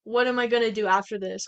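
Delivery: ordinary delivery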